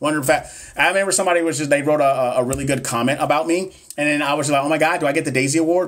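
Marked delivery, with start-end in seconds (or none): 4.6-5.9 play-acted heavy sarcasm, dripping with sarcasm. Speaker recalls a good comment written about them, retelling a very sarcastic remark. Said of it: "But I was being very sarcastic".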